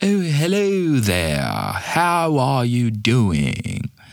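bad exaggerated put-on English accent, swooping, slow, dragged vowels. Mimicking a voice labeled Shakespeare English, horrible exaggerated English accent. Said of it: "if you want to try and do a horrible English accent like I did, just really drag out the vowels".

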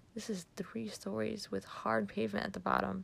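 plain reading voice

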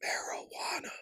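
hushed, breathed-out whisper. Quoting a guy who whispered it at me: whispered marijuana. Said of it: "the fact that he whispered marijuana at me".

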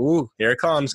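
ordinary delivery

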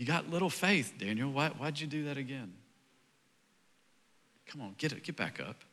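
very quiet, easy, hushed talking. Imitating Jesus in a different tone than the text suggests: imitating Jesus. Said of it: "That's not the tone I hear Jesus saying it to me".

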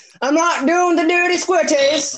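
put-on high-pitched British accent. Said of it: "That was British".

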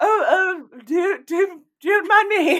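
very high, loud, drawn-out, very posh regal voice. Quoting Miss Piggy like the Queen: Miss Piggy as the Queen. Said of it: "it's the Queen, Miss Piggy".

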